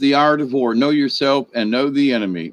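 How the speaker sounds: plain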